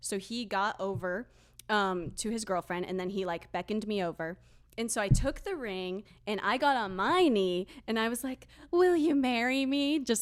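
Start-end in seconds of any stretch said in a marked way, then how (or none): 8.7-10.0 put-on very silly teenage girl cheerleader voice, high and loud. Retelling proposing with the ring on one knee: retelling a silly cheerleader voice. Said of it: "very, like, silly, like, teenage girl cheerleader".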